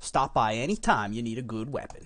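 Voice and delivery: put-on Texas accent. Speaker voices a character's line: Texas accent. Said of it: "do you think it's rude to talk in a Texas accent?".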